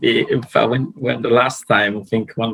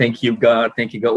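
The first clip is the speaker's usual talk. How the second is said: ordinary talk, nothing marked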